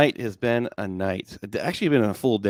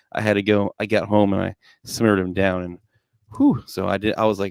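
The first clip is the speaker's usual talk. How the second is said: plain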